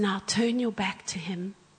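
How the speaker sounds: whispered speech. Retelling a guided imagination exercise with eyes closed: imitating someone whispering. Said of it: "he's whispering as he speaks".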